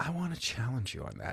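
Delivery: timid, soft, apologetic, sorry-sounding tone. Showing how a challenge is sometimes voiced in therapy: soft and apologetic. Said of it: "the way that we say it sometimes ... It's almost like, please don't be mad at me".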